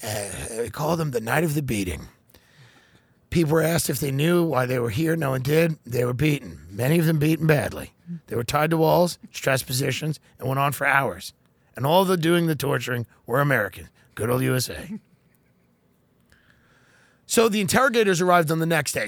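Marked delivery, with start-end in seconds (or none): 0.6-15.0 very calm, even, perfectly calm delivery. Imagining Biden making an announcement: calm Biden impression. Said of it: "Biden says it very calmly".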